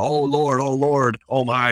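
mock panicked crowd crying out, high, drawn-out, frantic. Retelling getting a patient to the ambulance, imitating onlookers going crazy. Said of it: "and just going crazy".

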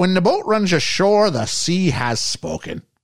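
flawless imitated Irish accent. Riffing with friends on whether a woman is Irish, quoting a saying: Irish accent. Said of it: "Flawless Irish accent".

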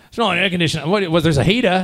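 put-on Welsh accent, botched and off. Retelling asking hotel staff about the air conditioning: put-on accent, admittedly wrong. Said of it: "That's not even the right accent".

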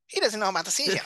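put-on voice, pitched very high and pushed loud. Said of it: "you got it perfectly".

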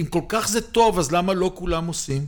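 put-on disdainful, scornful, dismissive tone. Retelling what an accountant said to him, imitating a dismissive remark. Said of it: "כזה בזלזול".

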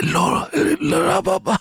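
put-on very high-pitched dying old man voice. Imagining how an ancient Greek teacher would sound speaking fluently: dying old man voice. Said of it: "if he sounded like a dying old man".

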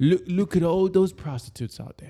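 put-on British accent. Joking about a man looking out a palace window, in a british accent. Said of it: "That's my British accent".

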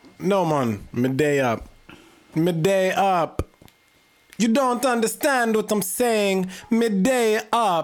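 put-on Italian-sounding accent. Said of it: "You sound Italian".

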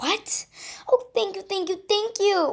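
squeaked. The narrator, just told by Diane of a Friday meeting, thanks her, squeaked. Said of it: "I squeaked".

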